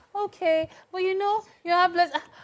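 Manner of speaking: gentle, soft-spoken, very high mystic voice. Mocking how a soft-spoken babalao would talk to a client, soft-spoken. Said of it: "but soft-spoken ones".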